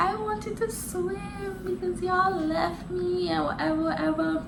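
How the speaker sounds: put-on high, soft, childish singsong whine.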